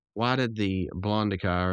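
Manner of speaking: usual speaking voice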